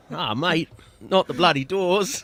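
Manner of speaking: very high, very loud, shrill fake Australian accent. After being told they sounded Australian, deliver it in a mock Australian accent. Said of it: "did go Australian, didn't it?".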